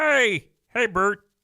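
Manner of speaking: puppet-like character voice. Speaker imitating a man who sounds like a Sesame Street Muppet: Muppet-like character voice. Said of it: "It sounds like a goddamn Muppet character".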